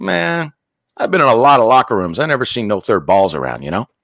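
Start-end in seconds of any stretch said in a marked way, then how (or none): none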